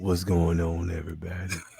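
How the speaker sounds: very low, deep baritone voice. Teasing another speaker about their usual greeting, imitating a baritone voice. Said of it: "You always get the baritone voice".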